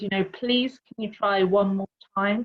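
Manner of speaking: put-on calm, peaceful tone. Retelling how they asked a chap amid carnage, in a peaceful voice. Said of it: "I just said in this peaceful voice".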